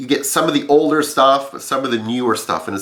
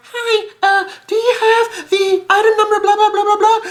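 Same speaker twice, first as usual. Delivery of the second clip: put-on small childlike voice, very high. Retelling phoning a store again about an item, little kid voice. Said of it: "little kid voice".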